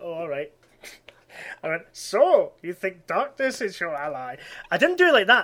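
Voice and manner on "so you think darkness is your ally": slow, deliberate, drawn-out character voice. Pressed to do the voice after hearing the surname Bane, Yoda voice. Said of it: "That was like Yoda".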